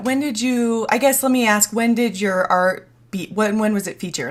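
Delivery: stuttering, halting, tripping over own words. Asking the other speaker a question in a conversation, stuttering. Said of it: "I'm sorry, I'm stuttering".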